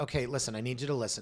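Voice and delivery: ordinary talk, nothing marked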